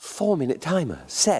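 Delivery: put-on Australian accent, slow and swooping, announcer-like. Imitating the device answering from the living room, in an Australian accent. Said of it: "Australian accent".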